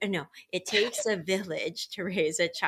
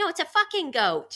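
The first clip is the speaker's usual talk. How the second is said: put-on very high, matter-of-fact little English boy voice; 10 semitones higher, 4 dB louder than usual. Retelling a four-year-old answering his mom: imitating a kid's English accent. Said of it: "it's in his accent".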